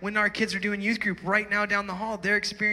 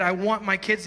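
plain

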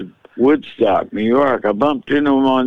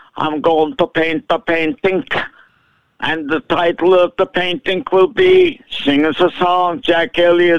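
put-on high-pitched voice with a Dutch accent; 7 semitones higher than usual. Recounting being introduced to de Kooning, quoting him in his Dutch accent. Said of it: "he had a Dutch accent".

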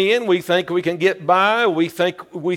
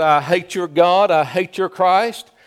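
ordinary talk, nothing marked

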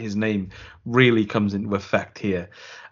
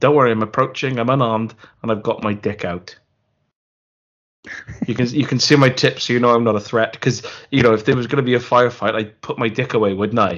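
plain

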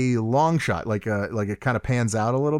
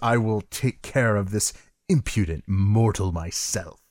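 put-on angry, spat words, lower pitch; 4 semitones lower than usual. Retelling the villain's line in a film scene: Shang Tsung spitting out words. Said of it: "he's spitting out the words almost".

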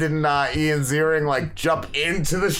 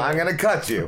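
ordinary delivery

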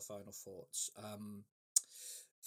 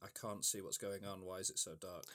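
ordinary talk, nothing marked

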